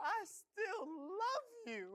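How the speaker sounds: tearful voice while speaking. Guy breaks down crying in a video, crying while talking. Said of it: "these are real tears".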